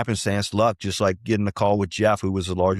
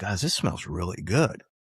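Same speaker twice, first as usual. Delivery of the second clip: put-on Southern North Carolina accent; 6 dB quieter than usual. Retelling what Harold said after tasting the blend: Harold's North Carolina accent. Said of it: "he's got this great North Carolina accent".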